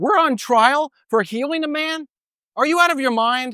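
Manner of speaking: sarcastic disbelief. Paraphrasing someone's reply while on trial, retelling a sarcastic retort. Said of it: "a very sarcastic and ironic and disrespectful thing to say".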